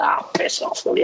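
muttered under the breath. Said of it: "I'm like".

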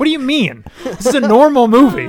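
loud, very high, defensive tone. Answering a question about the movie just recommended for rental, defensive. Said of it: "don't be so defensive".

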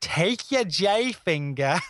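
put-on heavy New Yorker accent, laid on thick. Recalling a teacher naming fingers by the home keys: imitating Fuchs's thick New York accent. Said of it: "the thickest, like, New York accent".

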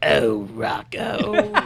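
cartoon voice in the manner of an emperor. Recalling a cartoon episode, a fan does the line as a Mrs. Bighead impression. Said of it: "you sound kind of like the emperor when you do it".

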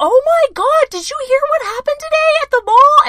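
very high, loud voice placed way up. Showing how high the voice can go without strain: high-pitched voice. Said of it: "my voice goes all the way up here".

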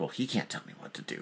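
put-on whispered, muttered bratty teen defiance.

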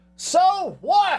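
put-on shrill, very high yell. Retelling a response yelled at a commercial: imitating own yell. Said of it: "I yelled".

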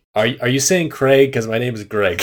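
ordinary talk

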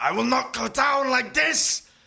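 shrill, very loud, pained scream, rising. Voicing a dying wizard writhing in pain: screaming. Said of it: "he screams".

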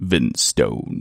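put-on low, deep baritone voice.

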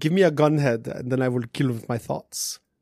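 put-on vampire voice. Speaking in character during a role-play scene, in a Dracula voice. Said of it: "kind of did that as a Dracula voice".

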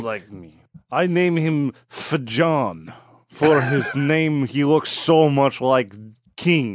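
fake Ukrainian accent, very slow, Fajan drawn out. Voicing a king who says the boy looks like him: put-on ukrainian accent. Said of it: "This is now Ukrainian accent".

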